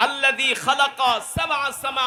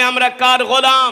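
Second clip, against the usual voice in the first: raised voice, louder; 7 dB louder than usual. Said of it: "আরো জোরে বলতে হবে".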